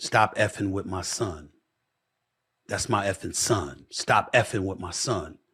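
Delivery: mock-angry, acted-out furious outburst. Recalling a father confronting him mid-game: retelling a furious father. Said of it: "I saw how furious he was".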